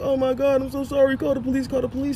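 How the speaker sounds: mock, high, tearful crying plea. Retelling a partner's phone call after a fight: imitating her crying on the phone. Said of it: "calls me back on the phone crying like".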